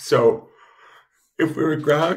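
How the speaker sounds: very loud talking through a yawn. Having just woken up, talking while yawning. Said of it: "excuse me for yawning".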